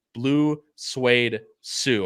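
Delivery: super slow, careful, each word spaced out. Announcing Noah's pick in the last race, super slow. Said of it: "I had to say that super slow".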